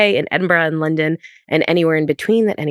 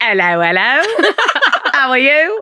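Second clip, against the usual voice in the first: hammed-up fake Cockney, sing-song, slow and swooping; 9 semitones higher, 3 dB louder than usual. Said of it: "the most fake Cockney accent".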